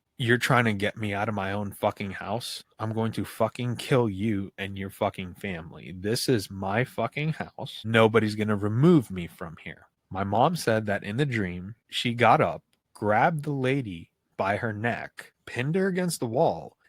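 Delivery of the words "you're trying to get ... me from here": ordinary talk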